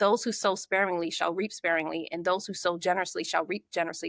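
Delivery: ordinary delivery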